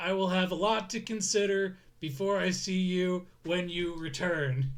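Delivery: very nervous droid voice. Game master voices the spaceport rental desk droid talking to its customer: nervous droid voice. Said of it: "don't like that my diplomatic droid has the same charisma as this very nervous Enterprise droid".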